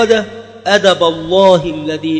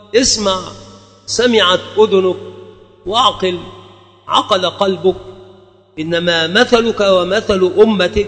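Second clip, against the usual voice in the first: ordinary talk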